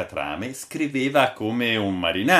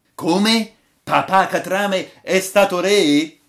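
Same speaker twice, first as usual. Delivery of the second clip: astonished, very high, drawn-out cry; 9 semitones higher, 6 dB louder than usual. Everyone hears the title of tonight's story and exclaims together: exclaiming. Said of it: "esclamarono tutti".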